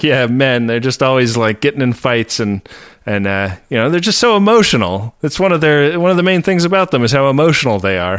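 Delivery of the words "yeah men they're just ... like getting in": usual speaking voice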